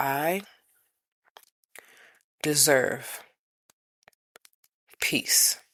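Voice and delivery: very slow, every word stretched out. Leading listeners to repeat an affirmation, very slow. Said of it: "say it real slow this time".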